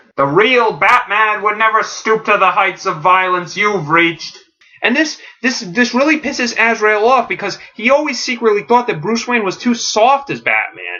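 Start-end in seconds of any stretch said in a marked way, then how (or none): 0.2-4.4 put-on high-pitched shouting. Recounting a Batman story standoff, the speaker voices Gordon yelling back at Azrael. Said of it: "And Gordon yells back".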